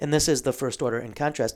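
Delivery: ordinary talk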